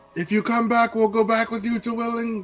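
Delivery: very high-pitched, loud shouting yell. Calling after someone who ran off, in character: in-character yell. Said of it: "I just yell".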